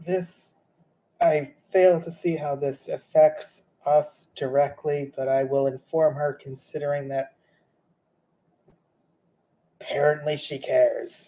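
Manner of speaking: beaten-down, defeated, resigned tone. Voicing a half-elf's reply to the party's message, defeated half-elven voice. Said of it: "Almost hear his defeatedness".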